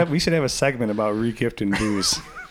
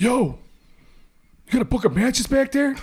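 put-on shout, higher; 13 semitones higher than usual. Retelling what a customer yelled on his way out to smoke: imitating someone yelling. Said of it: "he just yells".

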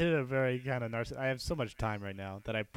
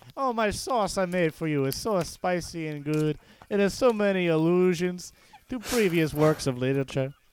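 loud, high put-on Italian accent; 7 semitones higher, 9 dB louder than usual. On a novel podcast, one host launches into a bit in a mock Italian accent. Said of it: "hear [name] do this voice".

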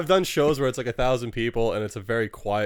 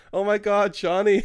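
high-pitched shout; 10 semitones higher than usual. Recalling a girl in a theater at the first scene of Pirates, retelling a girl's shout. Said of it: "this girl shouts".

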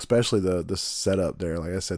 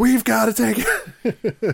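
put-on excited voice, higher and louder; 8 dB louder than usual. Retelling how someone reacted to a restaurant plan: imitating Cody all excited. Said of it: "She got all excited".

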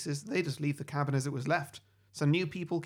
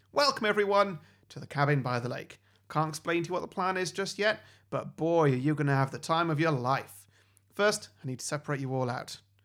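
usual speaking voice

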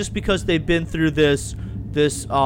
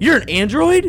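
mock very high, shrill, blurted, bursting with excitement; 10 semitones higher, 6 dB louder than usual. Recounting a scene where she asks who Soji's father is, retelling an excited question. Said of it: "And there's like excitement there".

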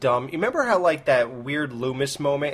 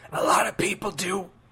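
put-on gross smoker's rasp, pitched up; 6 semitones higher than usual. Retelling a movie cameo, imitating Carrie Fisher's gross smoker's voice. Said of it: "that gross smoker's voice".

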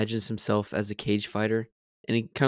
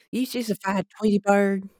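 put-on Southern accent, higher; 10 semitones higher than usual. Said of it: "we definitely quote things in Southern accents".

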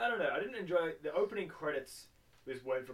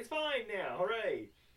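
high, chirpy, cheery mock cheer. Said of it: "and he's like".

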